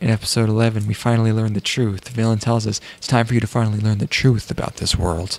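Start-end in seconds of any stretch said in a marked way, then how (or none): none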